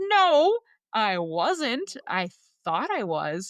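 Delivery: high, loud, emphatic no.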